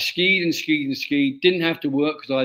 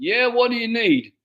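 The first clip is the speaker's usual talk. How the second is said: put-on American accent, higher; 8 semitones higher than usual. Retelling what the man at the door said when the speaker knocked, in an American accent. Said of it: "In his American accent".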